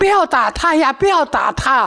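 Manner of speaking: mock, out-of-control, high, tearful outburst. Retelling the moment emotions broke loose, acting out a tearful outburst. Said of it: "当时我一下情绪就失控了".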